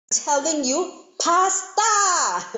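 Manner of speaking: fake very high yelling. Retelling a joke, the wife turning around to answer: imitating a yell. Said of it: "his wife turns around and yells".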